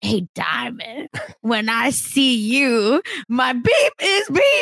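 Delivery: slow, play-acted drunken slur, words running together. Retelling a drunk man's line from the show, imitating drunk slurring. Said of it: "You can tell the words are slurring".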